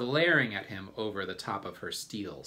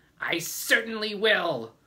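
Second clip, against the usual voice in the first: very high, shrill, loud, sharp biting snap; 12 semitones higher, 7 dB louder than usual. An aunt answers another aunt urging her to beat a boy; snapped. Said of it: "Aunt Spiker snapped".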